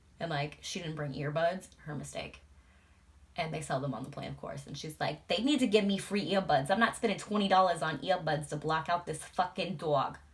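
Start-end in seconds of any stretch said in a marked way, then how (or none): 5.3-10.1 loud, imperfect put-on New York accent. Retelling what a woman on the plane said, in a put-on New York accent. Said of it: "I know I'm not doing the accent justice".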